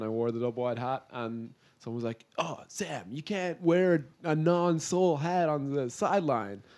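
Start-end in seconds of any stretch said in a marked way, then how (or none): 1.8-6.6 put-on, very slow, drawn-out, pitched-up American accent. Retelling what someone said about his hat in Dallas, imitating an American accent. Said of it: "did you just imitate an american accent".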